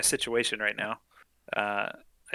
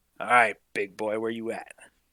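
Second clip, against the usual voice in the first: whispering under breath. Staring off the ship's side into the glassy sea: whispering under breath. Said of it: "whisper under my breath".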